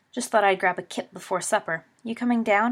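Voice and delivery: ordinary delivery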